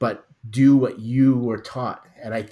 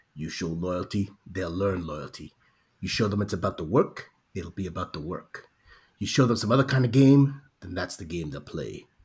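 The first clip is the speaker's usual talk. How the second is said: low, serious police-commander voice; 5 semitones lower, 4 dB quieter than usual. Reading a quote aloud to a listener: Lieutenant Daniels voice. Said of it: "in the voice of Lieutenant Va- Daniel".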